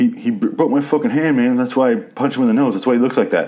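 mock jittery, high, nervous fibbing voice. Retelling a scene with a zombie head, voicing one guy as he lies, imitating him nervous. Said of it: "He's all nervous and very clearly lying".

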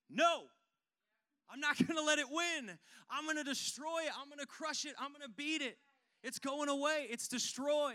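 high, loud, fired-up defiant shout. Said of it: "looked into your grave two thousand years ago and went".

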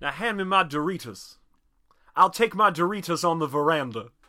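fake southern gentleman voice. Joking about drinking gin and tonics: put-on Southern accent. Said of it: "that was the accent I was doing".

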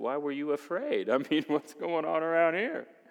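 kind-of-sarcastic tone. Retelling Matthew 14, quoting the rescuer's reply to the sinking man: retelling a kind-of-sarcastic line. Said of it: "kind of sarcastically says".

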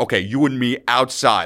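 ordinary talk

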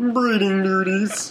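high-pitched cartoon puppet frog voice. Repeating a line someone said earlier, in Kermit the Frog voice. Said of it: "in Kermit the Frog voice".

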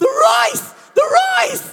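very loud, shrill, high, booming, long stretched-out shout. Retelling how an onlooker reacted to the miracle: imitating a man shouting at top of voice. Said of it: "starts shouting at the top of his voice".

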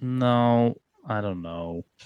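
soft, sad, deflated, drawn-out "no". In a group chat about planning categories, replying sad. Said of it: "You sound so sad".

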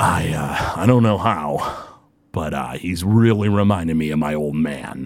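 disgusted, spat out. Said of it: "kinda spits at the ground and he goes".

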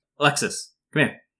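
loud, high yell, calling out. Narrating a scene where a man at locked filing cabinets calls Alexis, yelling out. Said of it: "he yells out".

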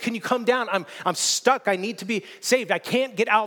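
loud, high-pitched shout. Retelling a story where a man stuck in a hole shouts to a passing doctor: imitating a shout for help. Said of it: "and he shouts out".

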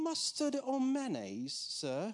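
put-on very high, sing-song, swooping English accent. Retelling a court jester's lighthearted question to Graham Cooke: Graham Cooke's English accent. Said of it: "I'm gonna try to copy it".

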